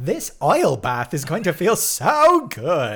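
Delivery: high, booming, swooping camp robot voice, belted out.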